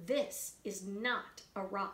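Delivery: gravely serious, low and very quiet. Reading a story, Dirt speaks after studying something uncovered; most serious voice. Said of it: "said Dirt in her most serious voice".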